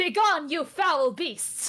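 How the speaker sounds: acted heroic, loud, drawn-out battle cry. Playing Arachne charging gremlins with a short sword: shouting in character. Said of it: "she shouts out".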